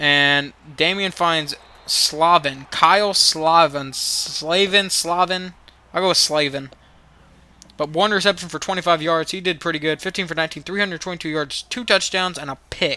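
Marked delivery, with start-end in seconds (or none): 10.0-13.0 rapid-fire run of numbers, rattled off fast. Reviewing a player's game stats, the speaker rattles them off really fast. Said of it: "I said that really fast".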